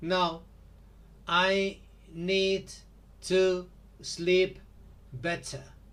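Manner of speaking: choppy, robot-like speech. Speaker acting out replying to a friend's question, in choppy robotic speech. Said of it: "Are you a robot or what?".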